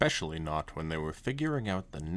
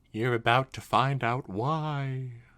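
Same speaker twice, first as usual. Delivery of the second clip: creepy, eerie voice, raised, with drawn-out why; 6 semitones higher, 6 dB louder than usual. Reading a story aloud, voicing the reply to Scootaloo in a creepy voice. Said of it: "I wanted to make that sound creepy".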